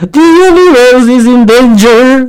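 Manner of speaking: slow, drawn-out, fully dramatic delivery. Reading a story aloud as witch grandma Mira addresses the children, dramatically. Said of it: "she said dramatically".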